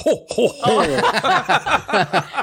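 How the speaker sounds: high, jolly ho ho ho. Imitating the other speaker's laugh: imitating the other's Santa laugh. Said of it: "You were like".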